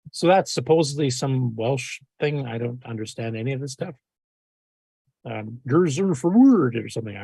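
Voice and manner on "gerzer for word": put-on mock Swedish voice. Trying to read a Welsh phrase aloud, sounding like the Swedish Chef. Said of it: "I'm sounding like a Swedish chef here".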